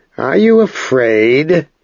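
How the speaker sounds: light, teasing mockery. Answering an angry rival's challenge, soft and mocking. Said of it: "Ged answered him softly, mockingly".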